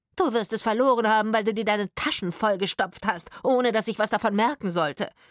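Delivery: loud, sharp, accusing snapping. A woman answers a man's protest, snapping at him. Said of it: "herrschte die Frau ihn an".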